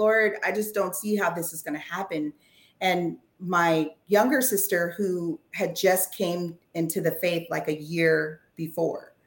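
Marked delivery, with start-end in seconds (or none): 0.0-2.3 acted-out, put-on sobbing, faster pace. Recounting praying after Dad cussed him out, retelling own sobbing prayer. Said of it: "I'm sobbing, I'm crying".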